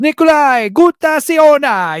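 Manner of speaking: very high-pitched, fake, put-on Italian accent. Saying a name again for a joke: put-on Italian accent. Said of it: "an Italian spin on it".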